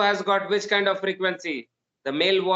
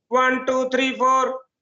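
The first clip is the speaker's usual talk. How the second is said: sharper, thinner voice at a higher pitch; 6 semitones higher, 3 dB louder than usual. Explaining voice frequency to listeners, the speaker counts again: higher-pitched voice. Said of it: "I increase the frequency".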